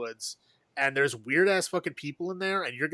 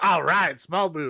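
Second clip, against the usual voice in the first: put-on upbeat, positive tone, slower pace; 5 dB louder than usual. Explaining how a man meant his remark, retelling in a positive tone. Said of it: "He was saying it in a positive way".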